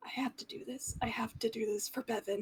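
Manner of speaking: hushed, growling mutter under the breath. A player voicing a character during a tabletop game, Arata growling under his breath. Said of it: "Arata was growling under his breath".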